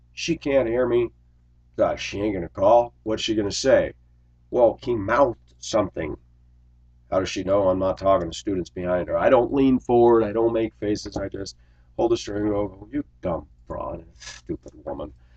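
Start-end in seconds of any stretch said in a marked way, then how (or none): 12.6-15.1 very quiet, low grumble under the breath. A driver retelling waiting at the wheel, imitating muttering to himself. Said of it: "I talk to myself".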